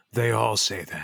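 hushed, close half-whisper. Playing a character speaking into Lester's ear, half-whispering in character. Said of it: "I just whisper in Lester's ear".

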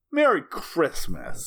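light, a little sassy. Recapping a Hallmark movie, quoting the magical lawyer's line, retelling with a bit of sass. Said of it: "he says it with a little bit of sass".

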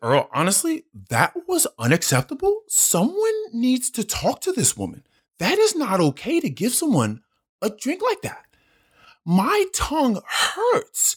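very high, sing-song, swooping, drawn-out woman's voice. Quoting what a woman said to him, imitating her voice. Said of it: "I'm not making this voice just to make fun of her".

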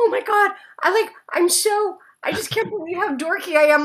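acted-out crying. Telling how she called her husband from the car, retelling her past crying. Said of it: "And I'm literally crying".

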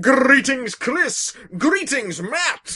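slow, deliberate, unhurried new voice. Reading out an email from a listener: new voice for Tom Monte. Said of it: "Different voice".

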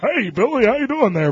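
bland, generic, everyday male voice.

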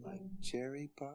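eerie, hushed tone. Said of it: "It's so creepy".

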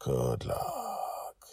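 very high, soft, hushed whisper. As she takes the ship's helm, he speaks to her, whispered. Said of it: "he whispered".

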